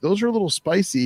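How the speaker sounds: teasing, pitched way up. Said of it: "And Billy's like".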